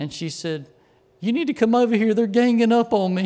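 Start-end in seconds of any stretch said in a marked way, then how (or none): 1.2-3.3 mock tearful, high, rushed crying voice. Retelling what she said crying on the phone to the speaker's aunt, imitating her crying.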